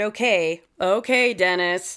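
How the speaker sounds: mocking, dry and sarcastic. Retelling how Terry answered Dennis, retelling a sarcastic reply. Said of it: "Terry sarcastically said".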